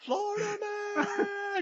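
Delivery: very high, all-out screamed yell. Acting out a movie character's one-liner: acted screaming of a line. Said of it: "Just screams it out loud".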